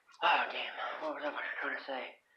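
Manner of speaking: soft whispered mutter to self.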